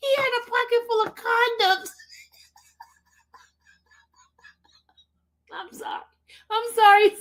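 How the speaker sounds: words breaking into laughter. Reacting to a shocking detail for the audience, laughing while talking. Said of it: "I don't mean to laugh".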